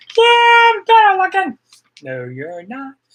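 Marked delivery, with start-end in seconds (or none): 0.2-1.6 very high, loud, squeaky puppet voice. Host voicing his lookalike who keeps showing up on the show, Elmo voice. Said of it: "he does sound like Elmo".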